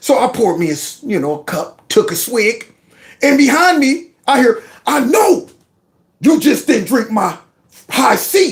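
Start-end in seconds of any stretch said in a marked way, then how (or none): 4.8-8.5 light hint of a heavy bass tone. Retelling a voice from behind accusing him of drinking the punch: imitating a deep bass voice. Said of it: "just the bass alone".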